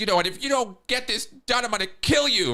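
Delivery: acted furious yelling. Retelling what they blurted out while really pissed: retelling an angry yell. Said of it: "I was over there yelling at her like".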